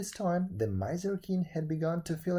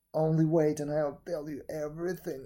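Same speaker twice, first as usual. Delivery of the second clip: ordinary delivery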